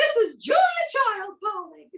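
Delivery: very high falsetto voice. Retelling a phone call from Julia Child: falsetto Julia Child voice.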